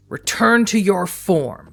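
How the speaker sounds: booming, commanding voice. Narrating a tabletop scene, voicing her in the Garou tongue: booming, commanding voice. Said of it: "in a booming, commanding voice".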